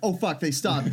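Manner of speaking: normal talking voice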